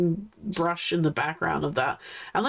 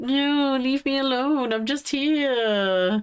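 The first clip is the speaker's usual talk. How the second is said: drowsy put-on cat grumble, pitched up; 7 semitones higher than usual. Voicing a viewer's cat in a photo: voicing a sleepy cat. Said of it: "so sleepy".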